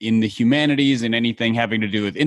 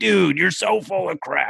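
scratchy, raspy, rough voice, pitched up; 7 semitones higher than usual. Describing how the other guy talks, imitating a raspy voice. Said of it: "has this real raspy voice and is like".

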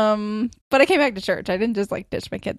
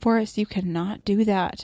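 reenacted serious tone. A mother retells telling off her child, using her serious mom voice. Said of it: "I had my serious mom voice".

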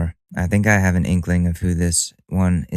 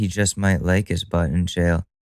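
plain

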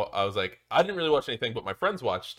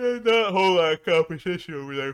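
pitched-up words spoken mid-yawn; 7 semitones higher, 3 dB louder than usual. Speaker commenting on a player's competition, talking through a yawn. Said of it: "Probably shouldn't talk when you yawn".

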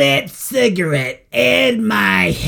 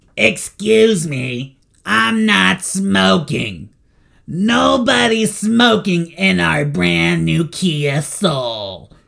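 rough, throat-straining, scruffy put-on voice; 2 semitones lower than usual. Recalling voicing a person all day: throat-straining put-on voice. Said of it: "I just ruined my vocal cords with".

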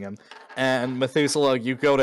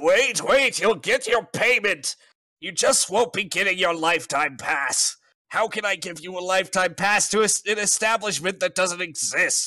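high-pitched, panicked scream; 7 semitones higher than usual. Voicing a character who was just punched in the face: screaming. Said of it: "he screams out".

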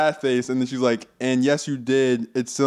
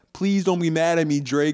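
mock young child or teenage voice, higher pitch; 4 semitones higher than usual. Retelling someone's apologetic messages, imitating a little kid. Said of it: "she sounded like a little ass kid".

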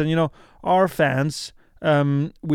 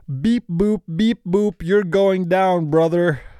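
put-on robot wrestler voice, higher and slower; 3 semitones higher than usual. Asked to picture a robot wrestling, the speaker does a robot wrestler impression. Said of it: "here's my impression of a robot wrestling".

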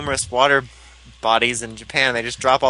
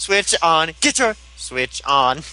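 robotic, machine-like delivery; 3 semitones higher than usual. Quoting a Switch ad set to the Yu-Gi-Oh! GX theme: robot voice. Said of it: "It's in the robot voice".

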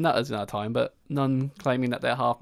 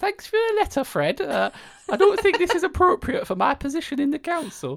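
awful put-on elderly Geordie accent, very high, shrill; 4 dB louder than usual. Imitating the listener's mum replying to a letter, in a bad elderly Geordie accent. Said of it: "You do such an awful accent".

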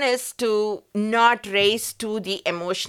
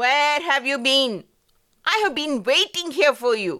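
furious, pitched-up outburst with rage in every word; 5 semitones higher than usual. Acting out Sam in an example scenario, shouting in rage. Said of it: "Sam is just shouting in rage".

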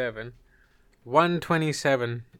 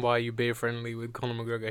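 normal talking voice

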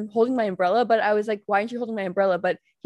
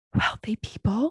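mock-whispered delivery. Recounting a man who whispered in the speaker's ear, the speaker quotes him, imitating a whisper. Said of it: "he whispers in my ear".

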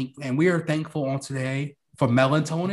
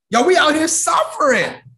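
very loud, very high, cracking outburst; 13 semitones higher, 9 dB louder than usual. Speaking to the others in the conversation, voice cracking. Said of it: "The crack in his voice".

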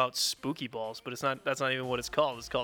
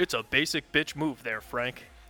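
put-on, mock newscaster voice. Teasing Frank in a chat, signing off in a newscaster voice. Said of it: "bad words in a newscaster voice".

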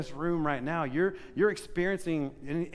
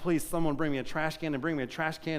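normal talking voice

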